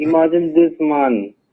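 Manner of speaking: ordinary talk, nothing marked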